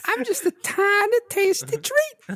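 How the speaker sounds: very high, sugary candy-like voice. Voicing a talking Werther's candy for the others: Mr. Hankey voice. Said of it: "this Werther sound like Mister Hanky?".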